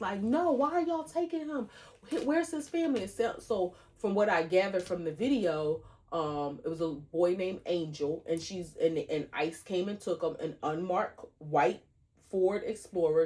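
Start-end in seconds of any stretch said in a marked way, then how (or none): 0.2-3.1 very high-pitched, desperate hollering. Retelling a woman in a video as ICE takes a boy, imitating her hollering. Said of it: "she was hollering".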